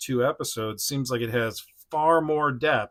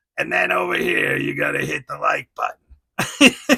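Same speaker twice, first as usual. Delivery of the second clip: put-on raised voice in Jersey accent; 3 semitones higher, 6 dB louder than usual. Voicing a Sabretooth figure telling viewers what to do, in a Jersey accent. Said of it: "he has like a Jersey accent".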